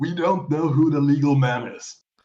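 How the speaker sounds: sour, grumbling, really salty commentator voice. Retelling what JR said at the start of the match: salty JR voice. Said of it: "in his really salty J R voice".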